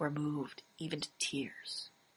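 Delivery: hushed, very quiet, tender, unhurried. Reading a tender moment aloud: very quiet and slow. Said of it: "I read it very quietly, slowly".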